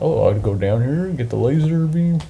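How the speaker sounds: puppet-like put-on Swedish-accented cook voice. Describing playing Metroid with the map, the speaker slips into a Swedish Chef voice. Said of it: "Swedish Chef".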